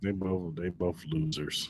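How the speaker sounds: slow, soft, dismissive put-down. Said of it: "Why you gotta say it like that?".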